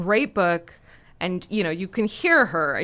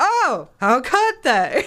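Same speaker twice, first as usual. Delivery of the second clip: put-on very slow, grand old-film star voice, big swoops; 8 semitones higher, 7 dB louder than usual. Quoting a film star's line about her old studio: Bette Davis impression. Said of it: "Anytime I do a Betty Davis impression".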